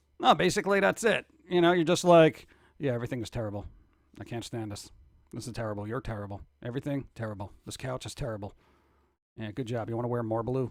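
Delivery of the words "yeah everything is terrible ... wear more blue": very low, dead-level flat monotone drone. Imitating another person's way of talking: very monotone voice. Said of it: "very monotone and just like".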